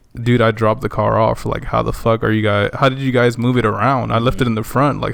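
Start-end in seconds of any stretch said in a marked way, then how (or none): none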